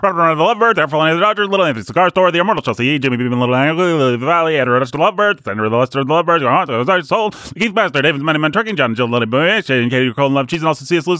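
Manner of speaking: rapid, rattled-off auctioneer-style patter. Reading out the patrons' names again on request: auctioneer-style read. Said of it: "an even more auctioneer-like read of our patrons".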